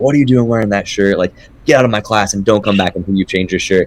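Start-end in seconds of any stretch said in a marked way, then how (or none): none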